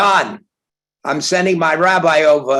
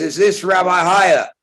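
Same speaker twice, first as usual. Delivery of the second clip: put-on rough voice, as if heard over a phone; 3 semitones higher than usual. Retelling a phone call, the speaker quotes the caller Mickey Rudin in a rough voice. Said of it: "a rough voice is on the other side".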